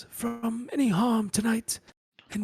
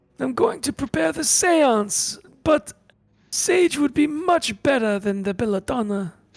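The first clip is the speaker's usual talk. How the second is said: put-on loud, grumpy, cranky, crotchety old man voice; 2 semitones higher, 6 dB louder than usual. In an actual play, a player voices a character answering the group: crotchety old man voice. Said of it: "He's a crotchety old man, / He's a crotchety old man, all right? He's, I look at the rest of the group. This guy's an asshole. Yeah, he kind of Two is. Face only shows up when it's convenient for him".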